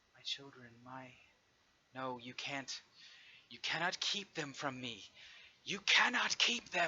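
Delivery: small, timid voice building to a yell. Narrating as Nimur starts to talk into the room, timid then growing louder. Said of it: "her voice is very small, it's very timid, but as she continues to talk, it gets louder and louder".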